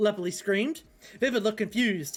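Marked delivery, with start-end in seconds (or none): none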